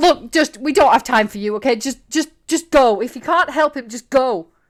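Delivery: harried, flustered, stumbling over the words. Voicing two guards telling someone to leave: flustered. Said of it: "they're getting even more flustered".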